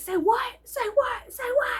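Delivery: very high-pitched, furious, angry shrieking. Retelling a man following them to their car, retelling a man screaming.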